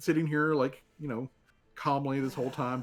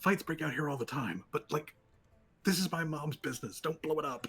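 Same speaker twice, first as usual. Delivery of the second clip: hushed stage half-whisper; 4 dB quieter than usual. A speaker retells what a woman half-whispered back to them: retelling a half-whisper. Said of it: "she whispers back".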